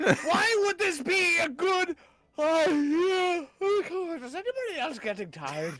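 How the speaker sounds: upset, high, drawn-out yelling until out of breath. A player at the table shouts at the group in character, yelling until winded. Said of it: "I got a little winded there from yelling".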